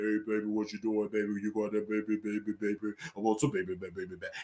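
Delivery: very deep, low, soft voice. Mocking how a husband sounds, the speaker acts him out in a deep husband voice. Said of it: "Your husband's voice can be so deep".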